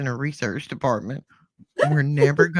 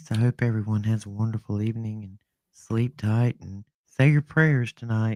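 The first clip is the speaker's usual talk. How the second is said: low, late-night radio announcer voice; 5 semitones lower than usual. Speaker signing off to everyone for the evening, in a Delilah at five voice. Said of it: "in my best Delilah at five voice".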